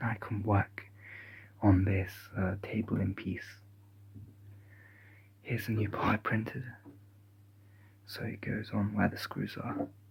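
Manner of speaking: speaking in a hushed whisper. Working on a table project while everyone is sleeping, whispering. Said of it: "The reason why I'm whispering".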